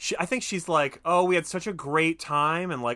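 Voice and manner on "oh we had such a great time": loud, showy, fake gushing. Retelling a character loudly putting someone on blast in a lobby: imitating loud fake gushing. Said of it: "she starts fake putting him on blast, like, loudly in the lobby".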